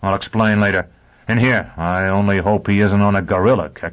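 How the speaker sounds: ordinary delivery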